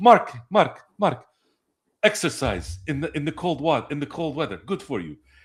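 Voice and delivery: put-on Iranian accent, done spot on. Retelling a story as someone did it, in the Iranian: Sheik voice with Iranian accent.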